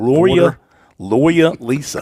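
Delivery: "lawyer" said slowly in a New England accent. Trying to say a hard word like the New Englanders: New England accent. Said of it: "like the New Englanders that I've been around".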